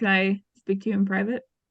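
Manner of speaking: trembling, shaky, nervous voice, rushed pace. Looking nervous, the character speaks to Doctor House in the med bay: shaky voice. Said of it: "And in a shaky voice".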